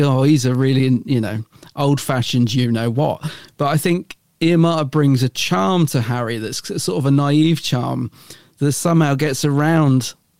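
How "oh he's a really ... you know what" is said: plain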